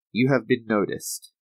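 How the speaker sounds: put-on robotic computerized announcement voice. Describing the announcement videos, imitating their computerized announcement voice. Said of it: "it's like a computerized voice".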